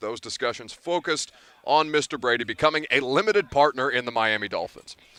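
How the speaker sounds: plain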